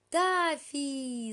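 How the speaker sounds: loud yell, shouting out. A girl arriving with the family by car spots the narrator in a garden, yelling. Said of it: "заорала Элли".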